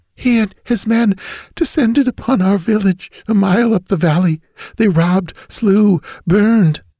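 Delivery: weak, faint, fading gasps, pitched very high. Held against the man's shoulder, she tells him what happened: weak, gasping voice. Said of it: "her voice swiftly growing weaker".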